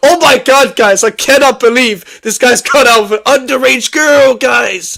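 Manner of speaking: thrilled, hyped-up delivery. Mocking how a man reported a serious story, imitating excited delivery. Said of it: "sound excited about the fact".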